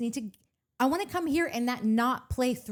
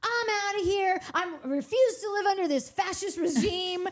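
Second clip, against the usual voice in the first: put-on teenage girl voice, higher; 9 semitones higher than usual. Acting out a sixteen-year-old telling her parents she's leaving: imitating a sixteen-year-old girl. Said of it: "that sixteen-year-old that's, like, telling her parents".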